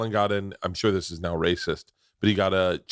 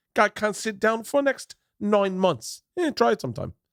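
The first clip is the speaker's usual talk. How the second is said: botched fake cockney accent, squeaky and very high-pitched; 12 semitones higher than usual. Speaker tells a joke story in a failed put-on accent. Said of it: "can't do the accent".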